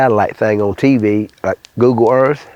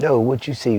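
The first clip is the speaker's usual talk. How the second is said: hushed half-whisper, no voice at all; 2 semitones higher, 5 dB quieter than usual. Retelling a hunting trip, quoting a cousin's reply: imitating a half-whisper.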